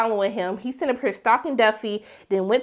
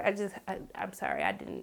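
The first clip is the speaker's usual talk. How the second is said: ordinary talk, nothing marked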